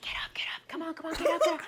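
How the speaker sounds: urgent, breathy whisper-yell. Retelling what a man said just after the speaker fell off a fence, retelling a whisper-yell. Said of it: "like whisper yelling".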